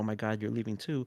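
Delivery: acted-out freaking out. Acting out a person in a well who sees the helper disappear: acting out freaking out. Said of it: "they start freaking out".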